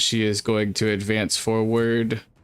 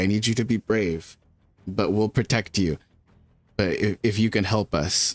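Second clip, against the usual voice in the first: hushed, soft whisper. Speaking as her character to a bird she wants as a companion, whispering. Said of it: "she like whispers to it".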